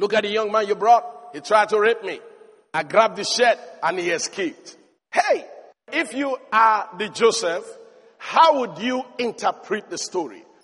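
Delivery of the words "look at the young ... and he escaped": normal talking voice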